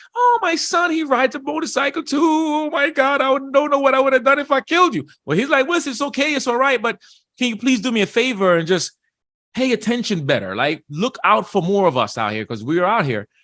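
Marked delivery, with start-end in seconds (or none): 0.2-5.1 acted, very high, frantic, panicked sobbing. Retelling an Instagram video of a woman who nearly hit a man, imitating frantic crying. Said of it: "she was frantic, like crying like crazy".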